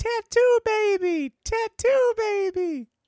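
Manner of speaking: play-acted, shrill, very high, excited fan scream. Predicting how Jeff will react, the speaker acts it out: imitating Jeff screaming. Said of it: "he's going to scream".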